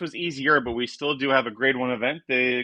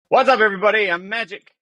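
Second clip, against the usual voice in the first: rushed, loud, high, rapid-fire at top speed; 8 semitones higher, 7 dB louder than usual. Greeting everybody at the start of the show, talking really fast. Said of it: "you're talking really fast there".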